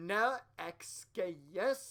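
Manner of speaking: put-on, regular mean woman voice. Voicing the sister character in a game: regular bitch voice. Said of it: "I'll make her sister the just regular bitch voice".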